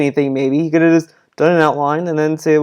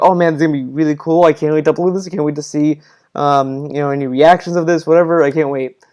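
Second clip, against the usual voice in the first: usual speaking voice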